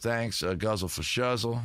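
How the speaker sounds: usual speaking voice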